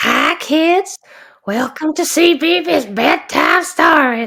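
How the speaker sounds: eerie drawn-out delivery. Joking about how a bedtime stories intro could have sounded, in a creepy voice. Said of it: "It'd have been good to do a creepy voice".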